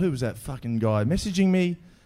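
ordinary talk, nothing marked

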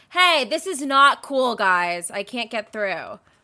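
light, mild scolding tone. Retelling what a woman on a jog said to the group: imitating her tone. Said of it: "Give us an impression of like her tone too".

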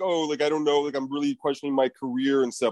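ordinary talk

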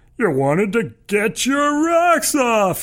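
very high-pitched, shrill, loud cackling shout. Mocking a giant girl, shouting in a high-pitched cackle. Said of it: "he shouts in a high-pitched cackle".

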